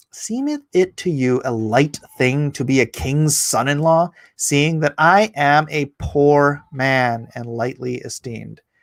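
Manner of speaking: ordinary delivery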